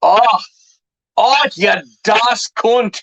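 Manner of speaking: high, very slow, drawn-out, off-target Glaswegian accent. Asked if they can speak Glaswegian, trying a phrase in an attempted Glaswegian accent. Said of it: "That's not the right accent".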